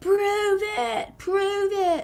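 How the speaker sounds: mock angry yelling. Retelling how a man started yelling at her in a chat, retelling an angry yell. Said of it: "and then starts yelling at her".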